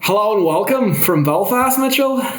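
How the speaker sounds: bad put-on Irish accent, very high pitched. Replying to a greeting from Belfast in a bad Irish accent. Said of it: "my Irish accent is just awful".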